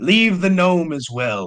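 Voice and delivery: high-pitched hobgoblin voice. Voicing a hobgoblin on a bridge who orders travellers to drop belongings: hobgoblin voice. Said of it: "he points his, uh, his finger at Saris".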